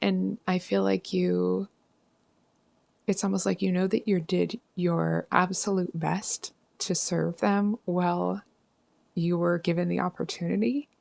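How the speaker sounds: on the verge of tears, speaking slowly. Speaking gently to a listener about doing their best, on the verge of tears. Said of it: "I just feel like I'm going to burst into tears, so I'm talking kind of slow".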